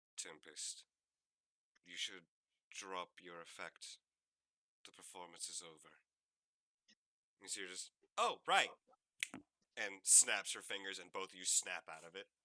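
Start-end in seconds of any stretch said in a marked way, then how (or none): 0.2-5.9 gentle, soft, quiet, soft-spoken delivery. From the other corner of the room, someone speaks to Tempest, softer voice. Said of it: "you hear a rather softer voice".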